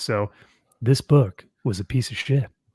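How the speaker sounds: mock soft ASMR whisper, angry underneath. Joking about doing ASMR even when mad: mock ASMR whisper while mad. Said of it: "we still have to A S M R, even when we're mad".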